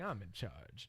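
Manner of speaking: dry, hushed, low sarcasm, almost under the breath. A co-host announces being in charge, sarcastic.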